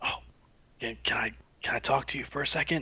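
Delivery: quiet whispering. Retelling what a woman said to them, quoting her whisper: imitating someone whispering. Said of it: "Like whispering to me".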